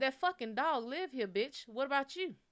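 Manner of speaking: acted, furious, high-pitched angry yell, temper gone. Retelling a phone argument, the moment of losing it: retelling own angry outburst. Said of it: "I lost it immediately".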